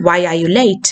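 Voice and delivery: pitch drops away, falling tone on late. Teaching that normal wh-questions take a falling tone: falling tone on 'late'. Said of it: "question falling tone ആയിരിക്കും".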